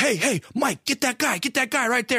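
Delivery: put-on woman yelling. Retelling how a lady suddenly started yelling to someone named Mike, retelling a lady's yell. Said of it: "this lady starts yelling".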